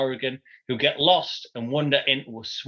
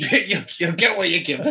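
put-on angry father voice, higher pitch; 3 semitones higher than usual. Putting words in the other speaker's mouth: mock angry dad voice. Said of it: "In the style of an angry dad".

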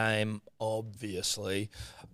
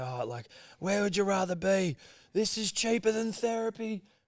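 play-acted, very high crowd scream; 10 semitones higher than usual. Recalling a guy at the kickoff, imitating a guy screaming. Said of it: "some guy to start screaming".

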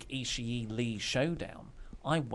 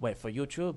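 put-on Japanese-accented English. Retelling asking Tomohiro Ishii for an intro: imitating Tomohiro Ishii's accent. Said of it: "I shouldn't do an accent".

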